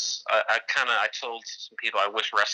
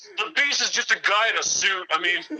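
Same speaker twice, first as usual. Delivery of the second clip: mock heckling fan voice. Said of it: "beer chugging rednecks".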